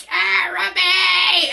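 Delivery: put-on gurgling scream. Retelling finding a dead mouse, imitating a gurgling scream. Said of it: "it's like this gurgling, horrible sound".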